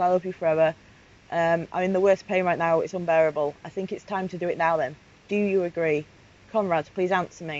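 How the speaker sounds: normal talking voice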